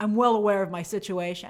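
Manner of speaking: mock deadpan, flat delivery. Retelling a man's reply in a diner conversation, imitating it deadpan.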